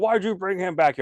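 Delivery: high-pitched, scolding yell. Retelling how the Bigfoot wife yells at him: imitating someone yelling. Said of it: "yelling at him".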